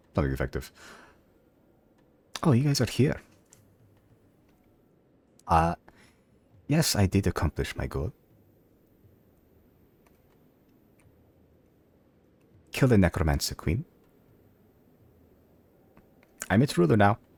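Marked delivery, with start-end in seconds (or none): 2.4-17.2 terrible fake European accent, pitched up. Voicing a character's response to the players in a game, in a very bad european accent. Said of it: "you get a response in a in a very bad European accent".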